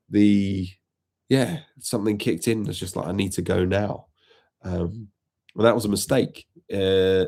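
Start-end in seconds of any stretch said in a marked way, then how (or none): none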